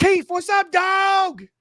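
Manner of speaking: very high, slow, slangy street talk. Acting out a casual greeting between coworkers as the speaker describes them, in a put-on slang dialect. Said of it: "every word's enunciated".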